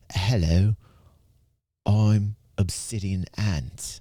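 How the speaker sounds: mock British online creator voice. Showing the speech patterns the algorithm loves, greet viewers in a British Obsidian Ant voice. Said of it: "Also, Britishmen".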